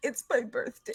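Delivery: soft sobbing through every word, acted out. Telling a story about a woman who spoke while crying, imitating someone sobbing. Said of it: "And as she's sobbing".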